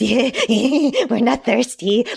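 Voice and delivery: exaggerated weird calculating character voice. Imitating a character's line after describing his voice: exaggerated Raiders impression. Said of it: "I'm really over exaggerating it".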